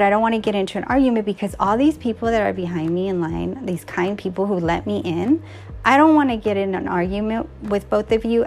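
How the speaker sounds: ordinary delivery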